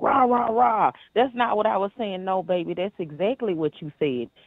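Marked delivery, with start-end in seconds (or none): 0.0-2.2 high-pitched, put-on defensiveness. Retelling how he reacted when his words were read back: imitating someone getting defensive. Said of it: "his initial reaction was to get defensive".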